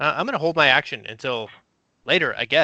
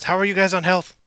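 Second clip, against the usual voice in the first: raised, pitched-up shout in character voice; 6 semitones higher, 3 dB louder than usual. Voicing a character who calls to the party about their health: shouting in character. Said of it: "Cordova shouts".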